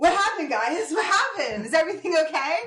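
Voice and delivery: deliberately bad acted bewilderment. Playing a character who pretends to be dazed after a possession, deliberately bad acting. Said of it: "but as a really bad actor".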